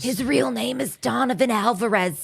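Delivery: put-on raspy young woman's voice. Retelling a roommate's lines in a raspy voice like Joan Rivers. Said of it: "the raspy voice of a young Joan Rivers".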